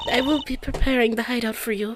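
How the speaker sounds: botched, bad, put-on Russian accent. Voicing a game character's lines in dialogue: failed Russian accent attempt. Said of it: "I can't do that accent".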